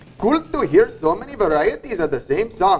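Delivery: put-on Indian accent. Showing off a self-declared best accent: put-on Indian accent. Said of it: "Best Indian accent you guys have ever heard right here".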